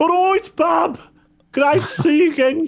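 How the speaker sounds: put-on very high-pitched halfling voice with Brummie accent. Voicing a halfling heard in the distance at sunset: Brummie halfling voice. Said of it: "your brummy, brummy halfling going".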